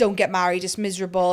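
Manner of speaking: ordinary talk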